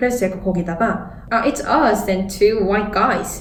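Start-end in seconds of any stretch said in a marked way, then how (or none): 1.3-3.4 slow, sarcastic delivery. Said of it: "이렇게 비꼬면서 대답을 했어요".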